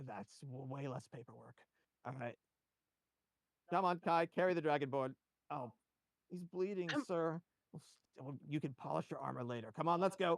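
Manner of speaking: weary, tired, resigned tone. Taking the survivor into custody, the man orders Kai along with tired resignation. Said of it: "It's kind of hard to get a read on him, but you don't sense any malice in this man. More just kind of a tired resignation. / It's kind of hard to get a read on him, but you don't sense any malice in t".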